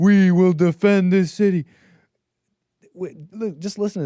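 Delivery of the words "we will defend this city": slow, loud rallying yell. Speaker imitates a man yelling to a cheering crowd: retelling a guy yelling. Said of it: "it's this guy yelling".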